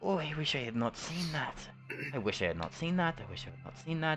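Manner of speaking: repeated high, hushed half-whisper under the breath. Voicing a character who keeps repeating a wish: half-whispering in character. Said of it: "she just keeps whispering that".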